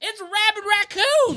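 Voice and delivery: mock, very high, shrill, panicked, drawn-out shriek. Retelling what a mom shouted when the neighbor came out, imitating her screaming. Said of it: "because she's screaming".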